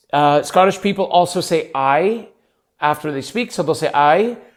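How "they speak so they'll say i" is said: normal talking voice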